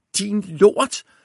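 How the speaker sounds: very high, abrupt, shrill sudden yell. Narrator reads a character suddenly shouting an insult, a sudden shout. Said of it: "råber Viggo pludselig".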